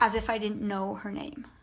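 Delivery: plain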